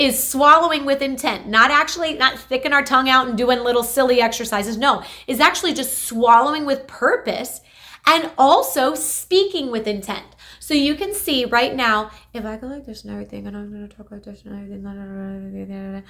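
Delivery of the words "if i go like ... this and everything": very quiet, tiny-mouthed, shrunken voice. Demonstrating what Parkinson's can do to the voice, volume gone down. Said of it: "my volume went down".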